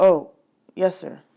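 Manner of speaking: plain reading voice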